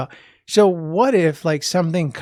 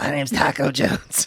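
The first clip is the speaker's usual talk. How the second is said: put-on hoarse, raspy voice of a stocky little kid; 2 semitones lower than usual. Imagining a little stocky kid introducing himself: raspy little kid voice. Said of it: "little stocky kid with a raspy voice".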